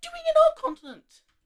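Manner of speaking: very high, very loud, cracking voice. Narrating a colonial dispute, speaking as the portuguese, voice cracking. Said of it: "Awful voice crack".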